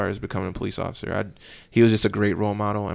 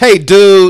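goofy, shrill, very high, very loud booming voice; 11 semitones higher, 17 dB louder than usual. Imitating a goofy, charismatic role model saying goodbye: imitating his goofy way of talking. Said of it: "That's how he sounds".

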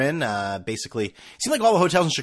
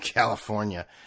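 put-on thick Chicago accent, lower and quieter; 4 semitones lower, 6 dB quieter than usual. Speaker imitates a man who asked where he was from, thick Chicago accent. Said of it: "the most Chicago accent you've ever heard".

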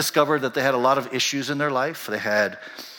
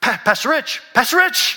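mock, eager, excited call at very high pitch; 11 semitones higher, 6 dB louder than usual. Retelling how a churchgoer tapped him and called out: imitating an excited greeting. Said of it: "real excited".

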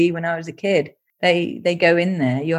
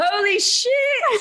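play-acted very high, loud shout. Retelling how somebody shouted out when an image came up, retelling a loud shout. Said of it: "somebody shouted out really loudly".

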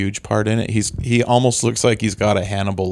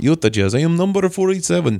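put-on thick Eastern European accent, pitched much higher; 8 semitones higher than usual. Two speakers riffing on how a Utah Jazz player talks, Andrei Kirilenko accent impression. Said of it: "It was very hard not to start talking like this".

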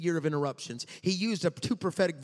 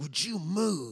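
mock mutter under the breath, slower. Retelling a woman leaning over in the aisle, muttering under her breath. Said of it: "under her breath".

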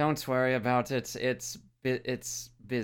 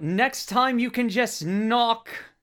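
shrill, very high, loud yell; 11 semitones higher, 7 dB louder than usual. Voicing a character calling after someone who leapt out the window: yelling in character. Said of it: "Gavel just yells out".

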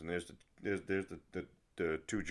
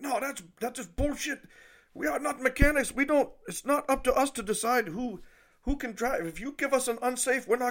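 mock angry outburst, much higher pitch; 4 dB louder than usual. Retelling how a man reacted to a spare-tire request, retelling an angry outburst. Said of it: "this freaking island guy just freaking blows up".

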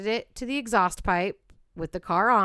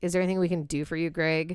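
sarcastic, mocking voice; 3 semitones lower than usual. Retelling what the police asked a suspect, imitating sarcastic police question. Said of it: "kind of, like, sarcastic".

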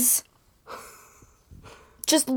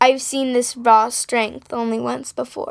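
ordinary talk, nothing marked

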